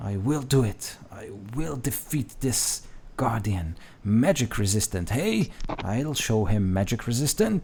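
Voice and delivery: hushed, whispered voice. An ancient wizard toils over his books and drawings in a vision, whispering. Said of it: "And this wizard whispers".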